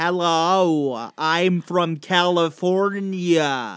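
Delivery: very slow attempted American accent. Trying an American accent after being asked to do it: attempted American accent. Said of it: "I can try".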